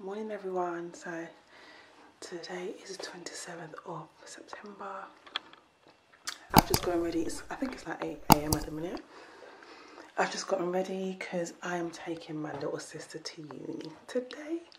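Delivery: very quiet, hushed whisper. Speaker greets viewers in the morning while someone is still sleeping, whispering. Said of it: "I'm whispering because someone is still sleeping".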